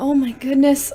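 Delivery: plain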